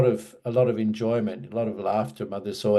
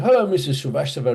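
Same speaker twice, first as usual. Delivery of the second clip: put-on strong, high-pitched Cockney accent; 5 semitones higher, 3 dB louder than usual. Retelling a visit to a tailor shop with his mother, the speaker quotes the tailor, imitating a Cockney accent. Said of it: "really Cockney sort of".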